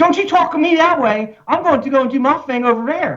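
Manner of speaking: very high-pitched, fed-up Baltimore accent, bursting out. Explaining the accent that slips out when frustrated, the speaker demonstrates it. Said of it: "as soon as you get frustrated with someone, it comes right out".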